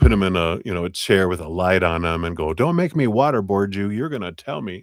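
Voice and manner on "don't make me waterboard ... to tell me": menacing, threatening tough-guy voice, pitched up. Describing a questioning they won't do, acting it out: mock interrogator voice. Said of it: "give 'em an inquisition".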